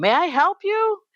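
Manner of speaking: very high, suspicious, wide-ranging pitch.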